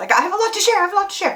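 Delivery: very high, fast, rattled-off repetition. Telling viewers she has a lot to share, talking fast. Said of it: "I feel like I'm talking fast".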